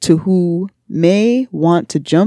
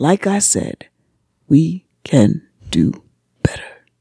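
theatrical, dramatic reading aloud. Reading a text aloud to the others, dramatic reading. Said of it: "I love the dramatic reading of that".

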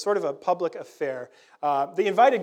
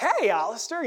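put-on spirited, lively voice, pitched high; 6 semitones higher than usual. Imitating a guest greeting at the open door: lively Tad impression. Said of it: "Tad is very lively".

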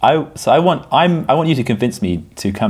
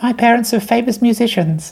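put-on very high little kid voice; 14 semitones higher than usual. A grown man plays a pupil in a mock school interview, in a child's voice. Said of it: "a full-grown man doing the voice of a child".

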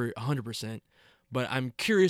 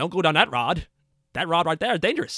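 put-on old man voice, higher; 4 semitones higher, 3 dB louder than usual. Imitating the old man character Judd from the movie, Judd voice. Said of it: "Why are you talking like that?".

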